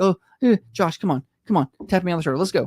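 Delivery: nervous, urgent, panicked, stammering, pleading tone. Retelling how Holly wanted to leave when security threatened them: imitating someone panicking. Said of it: "She starts panicking".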